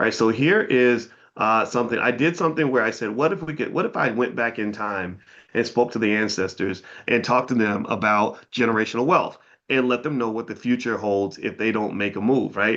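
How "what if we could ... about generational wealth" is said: ordinary talk, nothing marked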